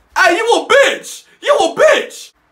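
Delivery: very high, very loud, top-of-the-lungs yell. Retelling how a friend yelled at a man with a gun: imitating someone yelling. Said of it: "yells top of his lungs".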